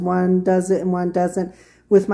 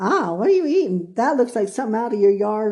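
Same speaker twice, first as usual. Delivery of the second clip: put-on light Southern accent; 3 semitones higher than usual. Retelling what a visiting cousin said about a salad: imitating cousin's Southern accent. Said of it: "he goes in his little Southern accent".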